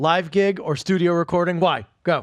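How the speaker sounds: very aggressive. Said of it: "That's very aggressive".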